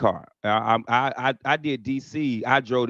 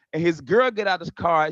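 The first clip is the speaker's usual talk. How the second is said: plain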